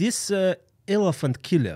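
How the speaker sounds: put-on slow, heavy, thick Russian accent, broken English. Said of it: "he had a super thick Russian accent".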